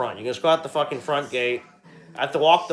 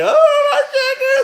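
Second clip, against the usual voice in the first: very high, loud sobbing wail; 8 dB louder than usual. Retelling a dog loose among a woman's chickens, imitating the woman crying. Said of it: "That woman crying".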